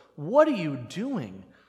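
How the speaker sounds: disdainful, scornful tone. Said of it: "that kind of disdain in her voice".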